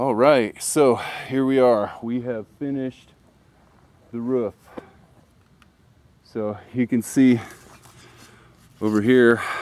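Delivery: puffing, short of breath, winded speech. Showing viewers a just-finished roof, speaking while winded. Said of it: "sorry I'm winded".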